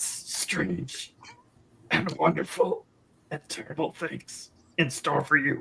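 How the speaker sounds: gritty put-on goat voice, choked, halting, creaky. Asked to show what it sounds like: goat talking on sawdust voice. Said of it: "so goat talking on sawdust".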